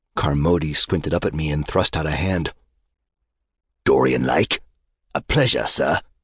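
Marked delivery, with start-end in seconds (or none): 3.8-6.0 put-on peppery, husky, low British accent with a warble. Del Carmody greets Dorian when introduced, Del Carmody's husky British accent. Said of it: "He spoke with a peppery British accent, lurking beneath a husky, tobacco-ravaged throat warble".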